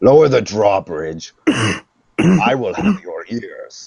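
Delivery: high, slow, menacing orc shout. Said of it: "shouts at them".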